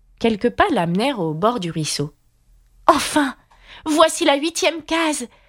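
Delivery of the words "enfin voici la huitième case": very high-pitched, exclaiming outcry. She leaps over the last stream into the eighth square, crying out. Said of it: "s'écria-t-elle".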